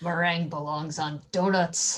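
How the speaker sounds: mumbled, grumbling, under the breath. Playing a character in a told game scene, mumbled under breath. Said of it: "I just mumble under my breath".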